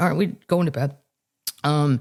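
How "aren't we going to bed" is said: usual speaking voice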